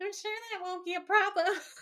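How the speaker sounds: mock-angry, very high-pitched, cross puppet voice. Recapping a scene, mimicking Dean repeating her line back: Dean as a mock-angry Muppet. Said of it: "He sounds like an angry Muppet".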